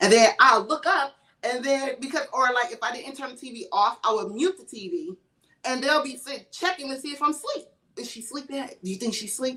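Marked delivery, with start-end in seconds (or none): 8.0-9.6 soft, hushed whisper. Retelling voices heard at night checking if she's asleep: imitating whispering voices. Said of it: "hear whispers like".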